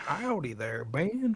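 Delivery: put-on southern prospector accent. Showing the voice given to a chat user's message: southern prospector voice. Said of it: "A prospector, like southern".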